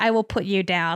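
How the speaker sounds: mock icy-cold delivery, the coldest voice. Retelling what he said while quoting him, in the coldest voice. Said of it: "like in the coldest voice".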